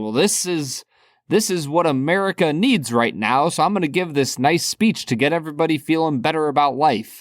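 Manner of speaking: ordinary delivery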